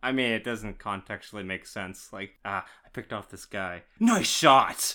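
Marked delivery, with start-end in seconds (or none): 4.0-4.9 very loud, high shout. Complaining about a game, acting out a companion's line: imitating Jackie shouting. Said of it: "Jackie no longer shouts nice shot".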